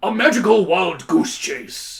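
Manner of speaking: loud shouting in a character voice. Voicing Harbolt in a game scene: shouting as Harbolt. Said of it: "shouts Harbolt".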